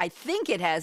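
ordinary talk, nothing marked

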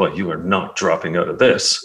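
mock disdainful tone. Acting out the woman who looked at you with disdain, mock-disdainful, retold. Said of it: "the woman looked at me with disdain".

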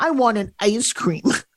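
put-on cranky, grumpy eight-year-old child voice. Retelling asking a daughter for ice cream at the end of the day, in an eight-year-old voice. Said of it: "in that eight-year-old voice I do".

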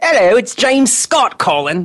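clumsy, high, fake British accent, maid voice. Faking an accent to imitate a caller: fake James Scott accent. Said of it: "I can fake an accent".

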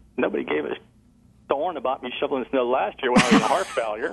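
teasing, tongue-in-cheek, acted, lighthearted tone. Retelling what the speaker jokingly said to their wife at the time, retelling a joking remark. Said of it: "I jokingly said to my wife".

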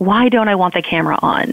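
normal talking voice

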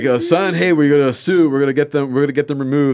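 fatherly dad voice. Acting out a made-up father speaking to his son: imitating a dad. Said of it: "Can you imagine the dad be like".

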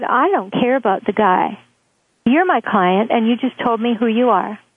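ordinary talk, nothing marked

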